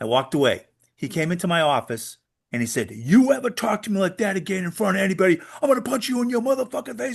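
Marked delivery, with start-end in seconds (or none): 2.9-7.2 mock screaming, shrill, pitched way up. Retelling a threat made in the office: imitating someone screaming. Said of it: "He's screaming at me".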